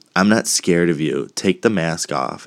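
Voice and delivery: plain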